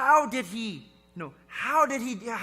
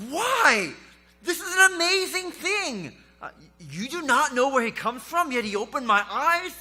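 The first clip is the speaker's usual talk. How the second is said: acted frustration, mock exasperated; 3 semitones higher than usual. Retelling the healed blind man's reply to those who doubt, acting out frustration. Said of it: "Do you hear the frustration in this blind man's voice?".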